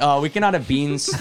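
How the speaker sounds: put-on sarcastic tone. Retelling a warning to a waiter about beans: imitating own sarcastic tone. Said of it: "I'm trying to sound as sarcastic as possible".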